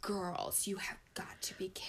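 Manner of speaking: play-acted breathy whisper, ashamed, utterly disappointed. Quoting her reaction to the girls, mock utter disappointment and shame. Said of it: "sound of just, like, utter disappointment and shame in her voice".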